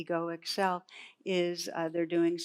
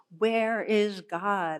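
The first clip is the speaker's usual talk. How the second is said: loud, stern, raised, demanding voice; 3 semitones higher, 6 dB louder than usual. Retelling the clergyman shaking his finger at the boy: imitating a raised voice. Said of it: "raises his voice and shakes his finger".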